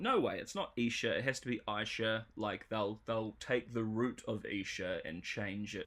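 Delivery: ordinary delivery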